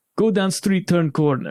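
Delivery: put-on Russian accent. Retelling a comedian's bit when approached: imitating a put-on russian accent. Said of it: "he just puts on a Russian accent".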